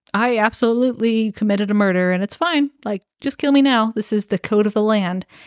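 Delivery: plain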